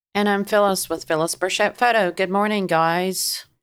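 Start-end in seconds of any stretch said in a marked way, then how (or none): 2.1-3.4 dry, cotton-in-mouth voice. Podcast co-host greeting the others at the start of the show, cottonmouth voice. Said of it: "you got some cotton in your mouth this morning?".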